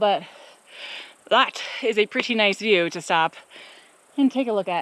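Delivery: out of breath, huffing. Climbing uphill while talking and stopping at a view: out of breath, huffing and puffing. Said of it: "I'm huffing and puffing up the hill".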